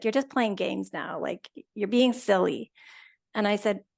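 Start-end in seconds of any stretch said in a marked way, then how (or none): 0.0-2.7 put-on frustrated scolding tone. Retelling an officer's reply after refused answers: imitating a frustrated officer. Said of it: "he's getting really frustrated".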